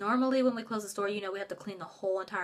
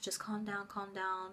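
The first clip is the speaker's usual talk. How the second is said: mock calm soothing tone, much quieter; 8 dB quieter than usual. The speaker recalls how a lifelong friend kept them calm, retelling soothing words. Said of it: "trying to keep me calm".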